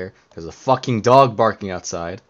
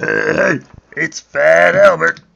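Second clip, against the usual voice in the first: very high, loud, slow, rough, creaky drawl; 10 semitones higher, 9 dB louder than usual. Describing a voice just used, imitating it: Fat Albert voice. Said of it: "That was like".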